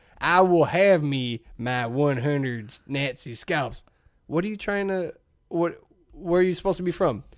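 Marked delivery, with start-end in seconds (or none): 0.2-3.8 very slow, badly done Southern drawl. Imitating Brad Pitt's accent as Aldo Raine: Brad Pitt Aldo Raine impression.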